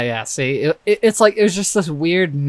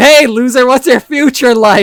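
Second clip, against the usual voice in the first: derisive, mocking parody voice; 9 semitones higher, 8 dB louder than usual. Parodying how the interviewer's question sounds to a homeless person: mocking imitation of the interviewer. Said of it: "Welcome to a homeless dude".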